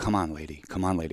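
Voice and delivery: impatient, repeated mumbling to oneself. Retelling waiting in a grocery store near a loud lady: muttering under breath, getting louder. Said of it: "under my breath, like".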